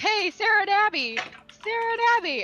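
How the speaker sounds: mock very high, loud hollering. Retelling a man in a crowd yelling for two girls, imitating someone yelling names. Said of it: "he's like yelling their name like".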